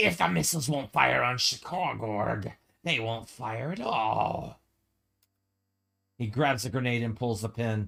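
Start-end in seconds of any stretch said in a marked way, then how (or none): 0.0-4.6 words hissed slowly out through the teeth. Game master voices the struck-down technician's last words to the players, hissing. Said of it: "He hisses".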